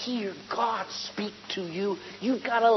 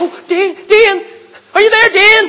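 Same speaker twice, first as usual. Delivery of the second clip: very high, very loud, panicky, flustered cries; 9 semitones higher, 10 dB louder than usual. Acting out someone frantically calling for help in a flustered voice, as a contrast to a calm one. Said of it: "never panicking".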